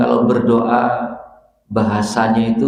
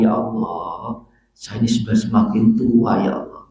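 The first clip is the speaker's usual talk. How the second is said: soft, gentle, humble pleading voice. Demonstrating how to pray to God, slow speech. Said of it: "Bahasanya pelan".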